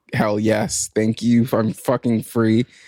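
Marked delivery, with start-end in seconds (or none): none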